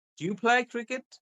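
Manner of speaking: voice rising in pitch on "cricket". Teaching question intonation, rising at the end. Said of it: "So your voice is going up".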